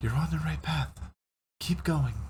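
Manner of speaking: very small, tiny, high female voice. Narrating to a player a voice heard in their head: tiny female voice. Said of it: "a very small, tiny female voice".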